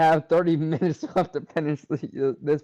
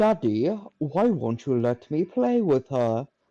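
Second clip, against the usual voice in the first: sing-song, put-on French American accent. Voicing the daughter asking her father, speak in a french american accent. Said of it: "stop using your French American voice on me".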